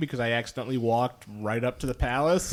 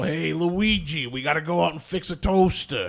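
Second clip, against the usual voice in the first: put-on Brooklyn accent, higher pitch; 4 semitones higher than usual. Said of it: "It was supposed to be a, a Brooklyn accent".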